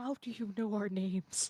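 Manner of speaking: confiding stage whisper. After the tall man crouches down to her level, she asks very quietly. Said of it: "very quietly like".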